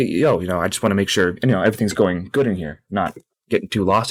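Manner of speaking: normal talking voice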